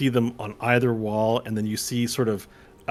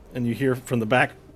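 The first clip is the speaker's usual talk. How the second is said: ordinary talk, nothing marked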